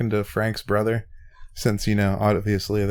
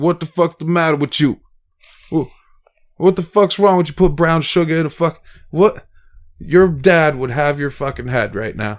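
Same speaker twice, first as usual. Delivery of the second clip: put-on New York Italian accent, higher and louder; 6 semitones higher, 7 dB louder than usual. Retelling a talk at the funeral home with Frank's brother: imitating a Bronx Italian accent. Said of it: "he even has, like, the accent, his brother does, from, like, say he grew up in, like, New York, the Bronx".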